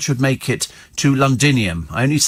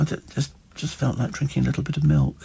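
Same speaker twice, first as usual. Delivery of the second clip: put-on plaintive little voice, much quieter; 7 dB quieter than usual. Acting out his excuse for drinking the milk, imitating a little plaintive voice. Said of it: "he's got this little plaintive voice".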